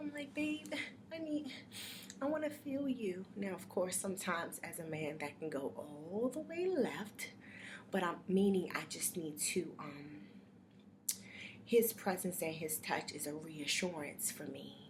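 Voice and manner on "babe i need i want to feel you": high-pitched whining. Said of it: "if I'm whining".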